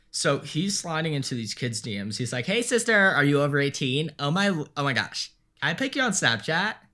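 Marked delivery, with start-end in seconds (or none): 2.4-6.7 put-on exaggerated, flamboyant camp voice. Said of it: "but that is his voice".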